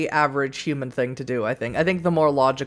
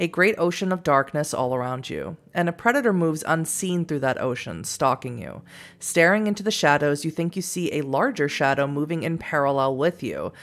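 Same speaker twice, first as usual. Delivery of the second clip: ordinary delivery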